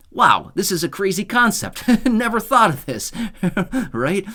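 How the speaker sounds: high, loud, laughing sarcastic amazement like a mock gasp.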